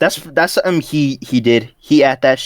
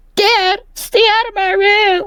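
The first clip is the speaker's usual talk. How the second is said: put-on high anime-boy voice, pitched way up. Repeating a cartoon character's line to her dad, anime-boy voice like Deku. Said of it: "sounding like some anime boy".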